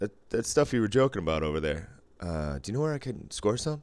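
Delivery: ordinary delivery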